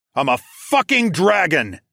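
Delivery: booming dragon voice. A dragon answers a frightened swordsman who asks what it is: thundered. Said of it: "I thundered".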